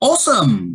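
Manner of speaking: awesome said with pitch climbing upward. Saying a word for listeners to repeat, rising intonation on awesome. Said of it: "these are going to have a rising intonation. Repeat after me".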